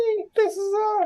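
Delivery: squeaky little voice, very high, slow and squiggly. Imitating how a huge guy sounds when he talks, in a squiggly voice imitation. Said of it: "he has like a squiggly voice".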